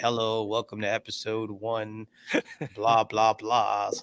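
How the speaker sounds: slow, dry, lifeless monotone. Retelling how they used to start the show: imitating own dry monotone delivery. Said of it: "just this dry, monotone, like, way".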